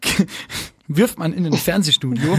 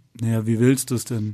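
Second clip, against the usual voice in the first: put-on deadpan voice, much lower in pitch; 5 semitones lower than usual. Retelling a conversation about changing the light setup: imitating Daniel's dry deadpan. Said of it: "so ganz trocken".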